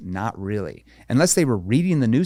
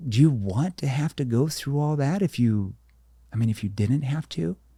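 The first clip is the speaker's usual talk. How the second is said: concerned tone, slower pace; 3 semitones higher than usual. Demonstrating how the speaker gets people to do the work, in a concerned tone. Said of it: "Concern tone".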